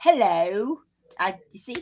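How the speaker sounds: weak, bad put-on British accent. Asked about doing accents, speaker attempts a bad british accent. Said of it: "a British accent".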